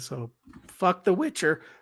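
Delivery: cracking voice. Finishing a complaint to another speaker, voice cracking. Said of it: "my voice cracked".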